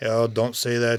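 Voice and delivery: put-on slightly Russian accent. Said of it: "me failing the accent".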